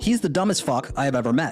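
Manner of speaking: plain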